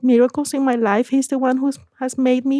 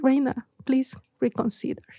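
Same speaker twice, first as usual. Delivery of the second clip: put-on very sweet voice, much quieter; 7 dB quieter than usual. Retelling what someone told the speaker, imitating a very sweet voice. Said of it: "with a very sweet voice".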